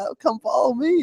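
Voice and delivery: very high-pitched Southern drawl. Retelling what the rider who led the way said: imitating a Southern accent. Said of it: "him with the Southern accent".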